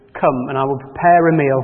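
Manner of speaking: plain reading voice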